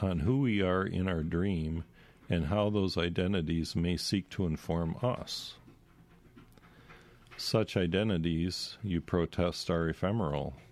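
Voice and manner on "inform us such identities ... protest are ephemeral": ordinary talk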